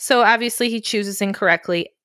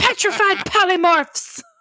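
mock frantic, hysterical delivery, very high pitched; 9 semitones higher than usual. Retelling a character turning back into clay in a rage; mock-hysterical cursing. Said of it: "he's cursing in the most hysterical way".

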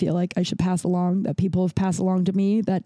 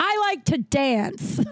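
loud, high-pitched blurted voice; 9 semitones higher than usual. Retelling what a girl in a bathroom stall said to the others, loud. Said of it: "the girl in the stall loudly goes".

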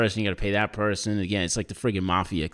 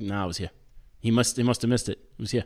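plain

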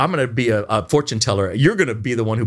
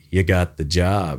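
put-on unexcited comedian voice, much lower pitch; 6 semitones lower than usual. Imitating agent Jim telling an actor the job is theirs, Steven Wright voice, not sounding excited. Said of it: "who sounds like Stephen Wright".

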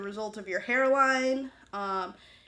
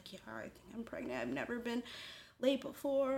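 mock-quiet, somber woman's voice, quieter, faster; 2 semitones higher, 10 dB quieter than usual. Speaker retells what a woman said in a video, imitating a quiet, somber woman. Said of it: "She was just very quiet and she was like".

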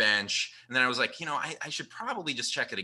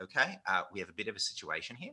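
put-on Australian accent going Kiwi, quieter; 4 semitones lower, 7 dB quieter than usual. Retelling what an Australian man from Perth said, in an Australian accent slipping into Kiwi. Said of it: "The Kiwi comes out".

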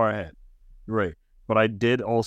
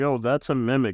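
ordinary talk

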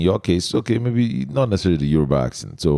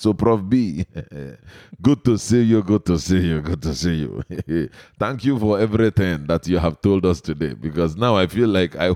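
Igbo-accented speech. Greeting and thanking Prof. B: exaggerated Igbo accent. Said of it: "I tend to use the Igbo accent".

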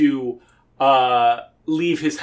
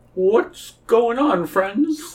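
put-on high-pitched cartoon bear voice; 9 semitones higher than usual. Acting out a story scene, greeting friends around a comet: Winnie the Pooh voice. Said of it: "And says".

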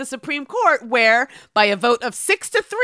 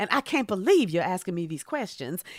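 soft, hushed, put-on Southern accent; 5 semitones lower, 7 dB quieter than usual. Mocking a nominee who acts unaware of the Voting Rights Act, Amy Coney Barrett with Southern accent. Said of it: "I'm doing her like she's from the South".

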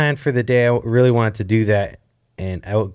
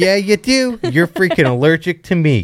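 pitched-up dog voice, matter-of-fact; 6 semitones higher, 3 dB louder than usual. Speaking for the dog Griffin when it appears: voicing the dog Griffin. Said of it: "He's like".

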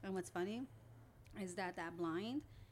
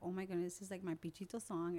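normal talking voice

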